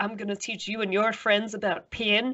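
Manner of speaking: heavy put-on Irish accent. Quoting Seamus O'Grady's line from a film clip: heavy Irish accent. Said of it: "his incredibly heavy Irish accent".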